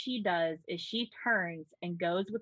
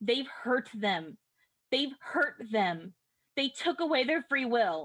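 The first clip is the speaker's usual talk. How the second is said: crying out loud, pitched up high; 5 semitones higher than usual. Playing a character who grabs a performer mid-show: yelling in character. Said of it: "starts yelling".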